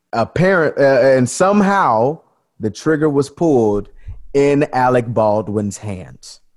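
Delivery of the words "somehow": somehow said oddly, with heavy stress. Telling the story of a gun fired on a film set: stress on somehow. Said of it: "I'm saying it weird like that".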